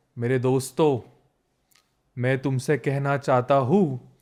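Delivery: put-on, very slow, drawn-out speech. Show how slowly he speaks when addressing his friends, imitating someone speaking very slowly. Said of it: "वो इतने धीरे बोलते हैं ना".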